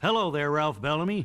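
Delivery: ordinary delivery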